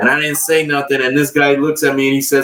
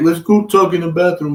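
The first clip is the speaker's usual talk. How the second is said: imitated crying, pleading tone, higher; 4 semitones higher than usual. Retelling how a guy started crying: imitating someone crying. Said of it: "he starts crying. He's like".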